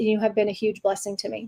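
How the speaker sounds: ordinary delivery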